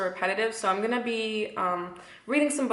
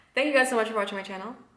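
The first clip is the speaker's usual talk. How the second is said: hurried, tumbling, rushed, rapid-fire talking; 2 semitones higher than usual. Thanking viewers for watching the channel: talking very fast. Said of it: "I'm talking so fast".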